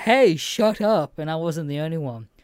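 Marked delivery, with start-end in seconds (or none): 0.0-1.2 infuriated, high, loud yell. Retelling yelling at people talking in the cinema: retelling a yell. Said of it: "I literally yelled at them to".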